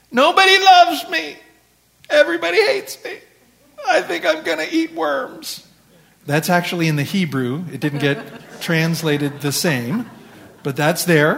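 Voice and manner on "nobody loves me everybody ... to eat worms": blatant acted-out whining, loud and very high. Acting out Elijah's response to the question: mock-whining as Elijah. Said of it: "It was just sheer bald-faced whining".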